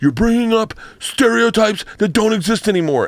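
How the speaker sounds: mock drunk man's voice, pitched way up. Retelling what a drunk audience member said: imitating a drunk man. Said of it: "the guy who's drunk as fuck, he's like".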